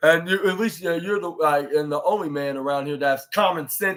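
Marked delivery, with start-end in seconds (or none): none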